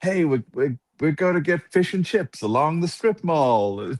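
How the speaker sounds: fake American accent, pitched way up. Retelling being asked to try the accent: put-on American accent. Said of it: "my American".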